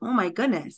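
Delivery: ordinary delivery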